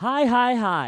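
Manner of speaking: very loud, pumped-up, high-energy delivery. Restarting the podcast greeting after a flat first try: with more energy. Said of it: "I'm gonna try to do this with more energy".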